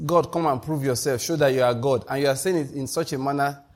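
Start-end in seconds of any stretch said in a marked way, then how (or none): none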